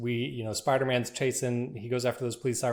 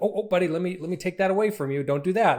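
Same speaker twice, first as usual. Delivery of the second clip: high-pitched, raised stern tone; 6 semitones higher, 5 dB louder than usual. Acting out walking in on a kid doing something dangerous: imitating a parent scolding a kid. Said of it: "a kid's doing something they shouldn't be doing".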